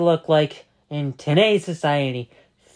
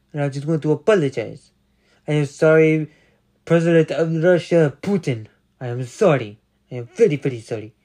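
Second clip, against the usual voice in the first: put-on Russian-accented English; 2 semitones lower than usual. Speaking to listeners, doing a Russian accent impression. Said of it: "This is my Russian impression".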